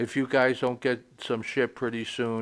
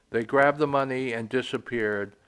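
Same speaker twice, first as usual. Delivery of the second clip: normal talking voice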